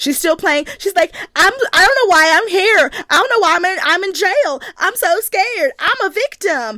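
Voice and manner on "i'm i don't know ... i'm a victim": high, loud, mock scared Southern accent. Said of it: "when she puts on her southern accent".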